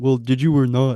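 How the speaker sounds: flat, level, expressionless monotone. Retelling a conversation, the speaker imitates the other man: imitating a monotone voice. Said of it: "he was always like very monotone. So I'll try and like imitate him".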